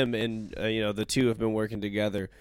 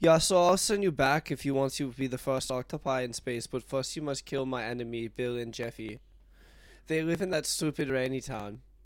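put-on, laid-on South African accent; 4 semitones higher than usual. Doing a bit for the listener, in an Elon Musk impression. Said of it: "The one you were just doing was more on point".

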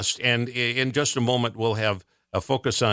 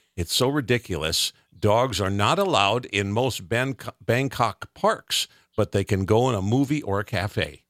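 ordinary delivery

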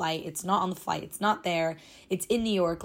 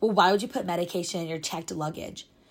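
mock rude, condescending woman's voice. Retelling how a woman questioned her about her bag, mock-rude and condescending. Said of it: "she's just being, like, so rude to me".

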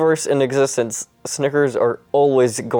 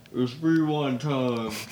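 muffled-sounding voice; 8 dB quieter than usual. In a made-up scene, a character crushed by debris speaks up, muffled. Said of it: "and then you hear a muffled".

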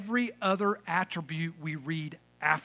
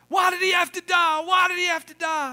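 grief-stricken, very high, loud wailing yell; 13 semitones higher, 8 dB louder than usual. Retelling a joke about a man at a grave: imitating someone yelling. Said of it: "he kept yelling".

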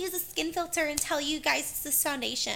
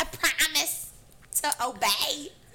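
awful, horrible, bad fake Southern accent. Mocking her wedding vows, filmed for YouTube, in a horrible accent. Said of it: "That was a horrible accent".

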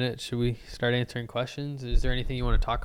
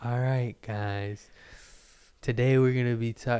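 slow, monotone put-on lecturer voice. Retelling how a lecturer starts class: slow droning voice imitating Mark Van Order. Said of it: "just the most droning voice".

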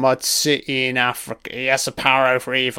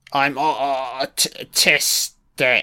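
put-on halting stutter, barely able to get words out. Mocking a film character who can barely talk: mock stammering. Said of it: "She can barely fucking talk".

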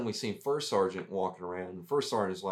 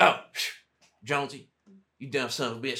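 imitated Texan accent; 3 semitones higher, 3 dB louder than usual. Retelling how the First Sergeant scolded him, in a Texan accent.

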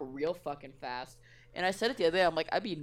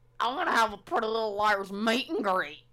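put-on cartoon girl voice, higher and louder; 5 semitones higher, 5 dB louder than usual. Quoting a cartoon character: Lola from Big Mouth voice. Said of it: "It's like Lola from".

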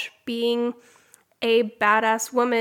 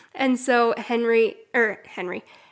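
ordinary delivery

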